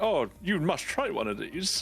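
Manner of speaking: chewy, toffee-mouthed voice, as if chewing toffee. Quoting a man who offers butterscotch sweets; voice like chewing toffee. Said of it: "Like he's constantly chewing a toffee".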